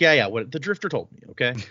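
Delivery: ordinary talk, nothing marked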